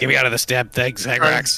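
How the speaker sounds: loud, full-throated yell. Trapped in a glass tube in character, calling for help: shouting in character. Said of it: "What's all that shouting?".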